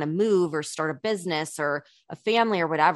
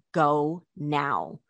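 mock-serious, acted super serious delivery. Quoting a woman who got super serious with the speaker, retelling a super serious warning. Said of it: "she got super serious and she was like".

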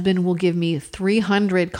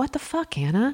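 pitched-up mutter under the breath; 7 semitones higher, 4 dB quieter than usual. Retelling her husband cursing at paper towels on the floor: imitating someone muttering under breath. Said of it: "I heard him say under his breath".

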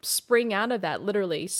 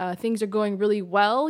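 plain

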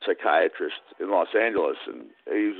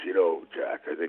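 deep put-on voice, quieter; 4 dB quieter than usual. Retelling a friend's reply on a long road trip: Max's deep voice. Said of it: "he had this deep voice".

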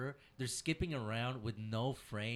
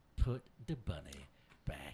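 put-on Southern accent, pitched much lower; 9 semitones lower than usual. Demonstrating the accent an actor was supposed to do, in a Nicolas Cage Southern accent. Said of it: "He's supposed to be Southern accent".

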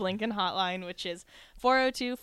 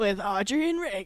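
big sports radio announcer voice. Finishing the show's intro line after praise: announcer voice. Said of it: "you got a great announcer voice".

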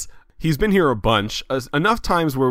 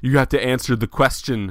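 ordinary talk

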